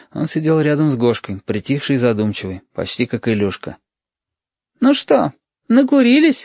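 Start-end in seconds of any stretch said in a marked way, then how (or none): 4.8-6.5 kindly, good-humored, good-natured tone, very high. A girl greets friends who have just returned, good-natured. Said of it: "добродушно спросила Алена".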